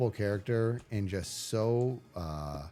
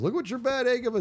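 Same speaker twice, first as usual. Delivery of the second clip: put-on toothless old man voice, higher and louder; 13 semitones higher, 5 dB louder than usual. Retelling a Simpsons scene where Grandpa complains to Homer: imitating Grandpa Simpson with missing teeth. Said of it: "he says it like missing teeth".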